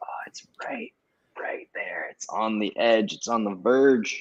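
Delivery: hushed, whispered voice. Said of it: "I'm just like".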